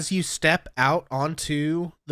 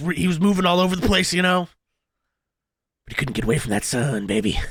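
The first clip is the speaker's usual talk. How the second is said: excited, eager bro character voice; 2 semitones higher, 3 dB louder than usual. The game master voices the sword, asked how the villain's death feels, Revenge excited bro voice. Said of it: "wasn't he just like a really excited bro".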